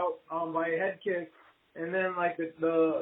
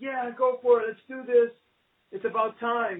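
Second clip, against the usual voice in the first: put-on light, eager burst of shouting, pitched up; 5 semitones higher than usual. Retelling how their father reacted to news of a fight: imitating someone shouting. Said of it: "And he just started shouting".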